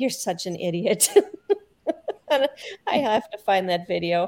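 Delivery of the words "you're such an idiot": mock half-crying, half-laughing voice. Retelling watching a man fall and get dragged, half crying, half laughing. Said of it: "I'm kind of like half crying, half laughing, going".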